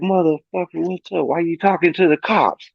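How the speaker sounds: mock angry high outburst. Retelling how a pissed-off friend confronted him: imitating a pissed-off friend. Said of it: "he's pissed".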